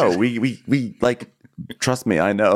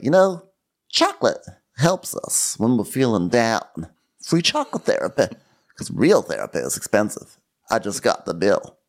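plain conversational delivery, normal voice. Retelling what Erica said about chocolate: imitating Erica. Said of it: "Erica's like".

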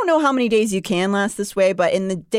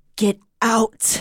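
put-on frail, wheezing voice. A wounded woman answers a man, in a frail wheeze. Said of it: "I wheezed".

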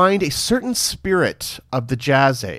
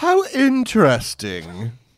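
grand lady voice with pitch swoops; 2 semitones higher than usual. Reacting to news about Julian Fellows: Dame Maggie Smith voice. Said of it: "let me put on my Dame Maggie Smith voice".

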